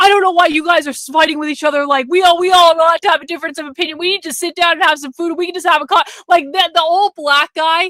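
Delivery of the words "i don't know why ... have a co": mock, loud hollered scolding yell. Retelling how an older man at the grill yelled at people: imitating someone yelling. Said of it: "he would just start yelling at people".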